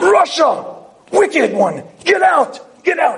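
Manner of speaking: high, screaming shout. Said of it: "He screams in the air".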